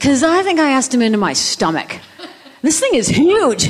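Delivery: put-on high, puzzled small-child voice.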